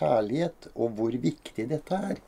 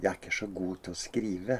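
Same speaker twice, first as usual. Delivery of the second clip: soft, hushed whisper. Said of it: "Så hvisket hun litt".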